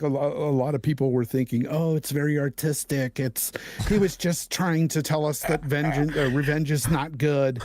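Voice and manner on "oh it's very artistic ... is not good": mocking put-on camp voice, affected delivery. Quoting what a lot of people thought of the game: imitating people in a camp voice. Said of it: "put the camp voice in there".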